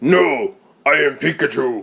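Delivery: rough, gruff voice-actor tone. Imagining a talking device in the fridge, the speaker voices it: rough voice. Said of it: "this has like a rough voice to it".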